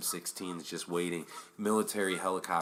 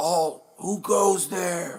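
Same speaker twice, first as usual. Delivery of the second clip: shrill, booming, very high, drawn-out yell; 12 semitones higher, 10 dB louder than usual. Retelling what a cop watching the doors shouted: imitating a cop yelling. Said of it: "he starts yelling".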